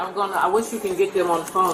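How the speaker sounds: normal talking voice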